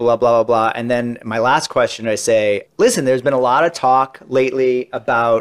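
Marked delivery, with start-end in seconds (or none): none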